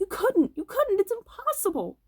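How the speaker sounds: very high cry, voice cracking and breaking apart. Narrator reads a man crying out to O'Brien, in a high, cracked voice. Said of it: "he cried out in a high, cracked voice".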